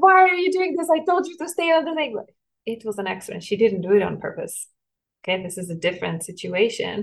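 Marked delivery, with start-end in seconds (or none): 0.0-2.2 very high, shrill, frightened, scolding yell. Retelling how a scared mother yelled at her daughter: imitating a mother yelling. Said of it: "she started yelling at her".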